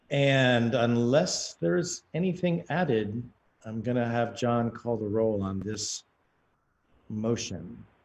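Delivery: speaking slowly, deliberately.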